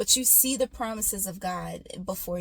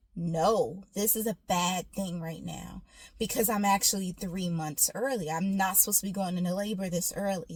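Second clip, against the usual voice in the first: normal talking voice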